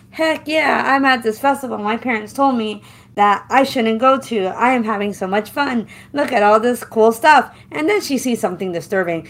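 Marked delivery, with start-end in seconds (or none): none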